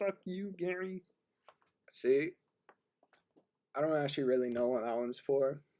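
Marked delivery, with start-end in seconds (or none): 0.0-1.0 high-pitched cartoon puppet frog voice. Showing off voice settings, the speaker does a Kermit the Frog voice. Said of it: "Kermit the Frog says".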